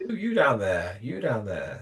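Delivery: put-on very posh upper-class voice, swooping pitch. Recalling a man shouting down to him from a tower block, imitating a very posh voice. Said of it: "his voice is very distinctive and he's very posh".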